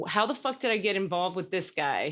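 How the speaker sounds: plain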